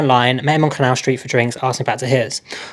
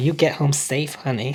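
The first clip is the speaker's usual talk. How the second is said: put-on voice full of attitude and sass; 8 dB quieter than usual. Imagining how the kind train guard said goodbye: sassy voice. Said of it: "the sort of the sassy".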